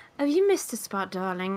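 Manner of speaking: genteel, flirty, polite, courteous voice. Voicing a character pointing out a missed spot to crew: polite character voice. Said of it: "she's very, like, polite".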